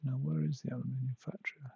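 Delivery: hushed whisper. Searching for the aluminium factory, whispering. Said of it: "I don't know why I'm whispering".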